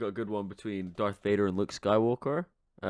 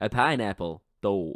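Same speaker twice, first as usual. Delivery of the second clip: put-on Bronx accent; 3 dB louder than usual. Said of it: "Could you do these in a Bronx accent?".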